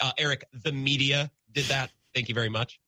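ordinary talk

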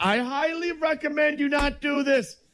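high, hollered officer-style yell. Pretending to be the Coast Guard yelling at a man in a ball: mock Coast Guard officer yelling. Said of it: "if you're at the Coast Guard, what are you yelling".

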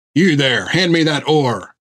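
gruff, growling voice. A narrator reads Jack's order to one of the men, growled. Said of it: "he growled".

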